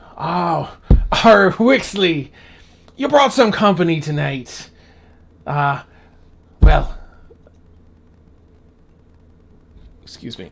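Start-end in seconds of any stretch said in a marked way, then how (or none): 0.2-7.0 slow, loud, salty sea-dog pirate drawl. Voicing a ghostly old fisherman greeting Wixley: pirate speak. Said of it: "it's got the pirate speak and everything".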